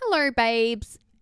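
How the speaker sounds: put-on Australian accent. Speaker quotes a woman's greeting, in an Aussie accent. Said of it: "Aussie accent in brackets".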